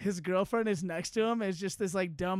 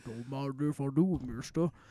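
put-on insane baritone voice, pitched lower; 5 semitones lower than usual. Retelling a contract signing in an imitation: Scottie Pippen's insane baritone. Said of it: "insane baritone voice".

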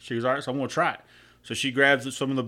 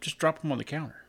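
mock expressionless, flat, matter-of-fact deadpan; 2 semitones higher, 7 dB quieter than usual. Retelling what the kids told their mother: imitating a deadpan reply. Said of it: "her kids looked at her just deadpan".

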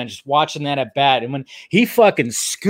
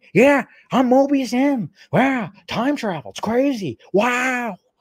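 deliberately terrible, very high, slow put-on drawl; 9 semitones higher than usual. Praising an actor's Loki role, then doing a terrible Owen Wilson impression. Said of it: "terrible, terrible, um, Owen Wilson impression".

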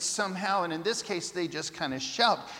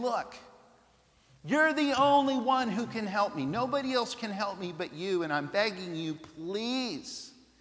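play-acted groveling, crying, tearful pleading. Retelling a woman's plea at Jesus's feet: imitating someone crying and begging. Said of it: "She is screaming and crying and begging".

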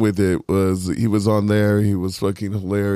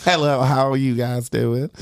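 put-on strong drawled Southern accent; 4 semitones higher than usual. Imitating Leslie Jordan greeting people: Leslie Jordan impression. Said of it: "He sounds like the most Southern".

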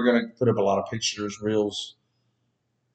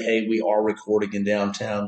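ordinary talk

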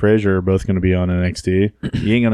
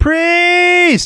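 put-on yell, higher pitch; 4 dB louder than usual. Retelling how Reese shouted during a wrestling match: imitating Reese yelling. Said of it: "She's yelling".

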